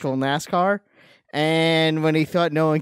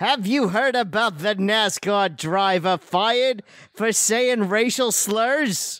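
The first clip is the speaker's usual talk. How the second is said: slow sportscaster delivery, raised pitch; 5 semitones higher than usual. Asked to announce a sports story: Howard Cosell voice. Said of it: "you gotta say it like Howard Cosell".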